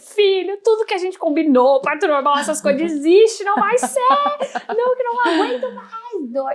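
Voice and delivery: very high, loud, pleading screaming. A woman recounts what she shouted to her belly in labor, re-enacting her own screaming. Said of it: "eu gritava e eu falava com a barriga".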